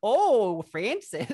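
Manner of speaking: put-on high-pitched Midwestern Michigan accent. Imitating the mom character from a movie: imitating the mom's Midwestern accent. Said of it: "her accent is so".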